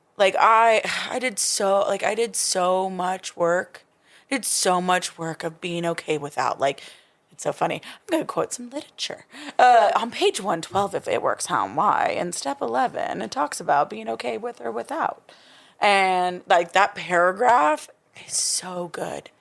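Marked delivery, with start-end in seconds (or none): 10.0-15.3 on-air radio announcer reading voice. Quoting a passage from a book aloud, the speaker slips into a radio voice. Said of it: "You just used your radio voice just now".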